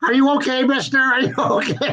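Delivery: frantic, high-pitched mock scream in a woman's voice. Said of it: "started screaming".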